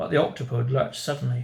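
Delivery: ordinary delivery, nothing marked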